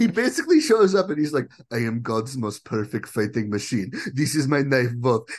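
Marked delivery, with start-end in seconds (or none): 1.7-5.3 over-the-top, exaggerated Russian accent. Describing a movie character's entrance, over-the-top Boyka Russian accent. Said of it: "He is doing the most like over-the-top Russian accent".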